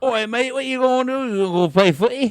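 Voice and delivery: very high, loud, botched British accent. Attempting an accent while expecting to botch it, in a bad British accent. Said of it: "I was gonna try and do an accent".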